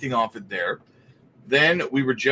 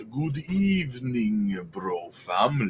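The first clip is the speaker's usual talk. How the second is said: hushed, cheesy vampire voice; 3 semitones lower, 6 dB quieter than usual. Greeting a listener, in his best cheesy vampire voice. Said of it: "in my best cheesy vampire voice".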